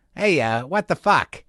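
put-on Boston accent. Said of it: "I'm giving myself flashbacks".

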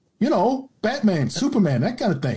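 put-on Michigan accent. Retelling what an internet marketer client asked for: Michigan accent. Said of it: "Michigan accent".

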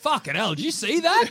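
put-on Australian accent. Joking about a Mortal Kombat cast all doing Aussie accents: put-on Australian accent. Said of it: "everyone's doing Aussie ones".

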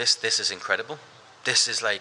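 ordinary delivery

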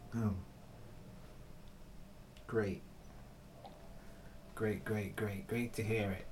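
sarcastic tone. Reacting to a quote just read aloud, sarcastic. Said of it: "Your sarcasm".

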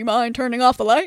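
very dumb, dopey, dim-witted put-on voice. The speaker tries out a voice that just came to mind: very dumb voice. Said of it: "I immediately had a very dumb voice come to mind".

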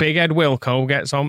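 rough, off-the-mark put-on pundit voice. Doing an impression of Brian Clough for the others: Brian Clough impression. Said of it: "I can do a Brian Clough".

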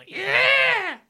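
high, loud cheering yell.

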